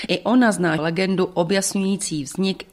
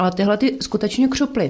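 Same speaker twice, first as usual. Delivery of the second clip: talking with mouth full of food; 4 semitones higher than usual. Tasting the crunchy pastries on the microphone, talking with mouth full. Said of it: "S plnou pusou se opravdu špatně mluví".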